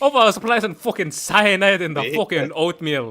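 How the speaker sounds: put-on Scottish accent. Ranting in character as Alfarius while cursing: put-on Scottish accent. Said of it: "Scottish Alfarius".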